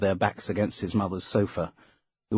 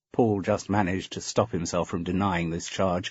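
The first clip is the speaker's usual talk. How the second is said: usual speaking voice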